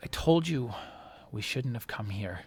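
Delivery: perfectly calm, unbothered, very soft delivery. Narrating a scene, a woman looks up at you and answers, very calm. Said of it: "she just looks up at you very calm and says".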